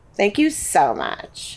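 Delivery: dead-faced, flat, creaky vocal fry. Showing how the phrase can sound insincere, said deadpan with vocal fry. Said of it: "said dead faced with vocal fry".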